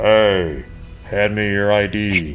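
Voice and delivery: weird, robotic, put-on robot voice. Picturing walking over there in that outfit and speaking, weird RoboCop voice. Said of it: "with like a weird voice".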